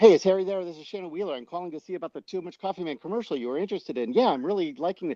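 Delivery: fast, high-pitched, rattled-off patter. The speaker retells phoning a man back, doing a fast-talking Too Much Coffee Man voice. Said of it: "I took the voice because he talked so fast".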